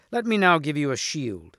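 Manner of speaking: usual speaking voice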